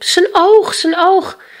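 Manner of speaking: very high, loud crying out. Reaching the mountaintop, he points with his finger and is calling out. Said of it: "Hij wees met zijn vinger en riep".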